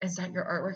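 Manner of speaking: put-on whispering woman's voice. Retelling a woman approaching during a performance: imitating her whispering. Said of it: "She was, like, whispering".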